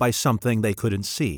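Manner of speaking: plain reading voice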